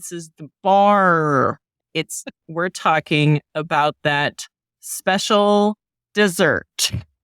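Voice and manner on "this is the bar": thick, laid-on Midwestern accent, bar drawn out. Repeating the topic to clear up a misunderstanding: heavier Midwestern accent. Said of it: "maybe I need to say it with, like, a heavier Midwestern accent".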